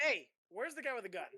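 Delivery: yelling loudly. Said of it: "I yell to the, everybody else".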